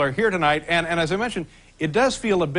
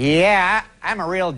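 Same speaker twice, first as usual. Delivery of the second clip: dorky guy voice, louder; 4 dB louder than usual. Acting out a guy oversharing to impress a new woman at the office: dorky guy voice. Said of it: "The dorky guy volunteering way too much information".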